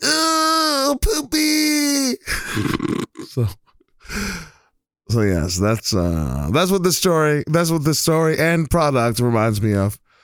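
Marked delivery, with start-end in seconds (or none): 0.0-2.1 very high-pitched mock yelling. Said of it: "you just hear her yell".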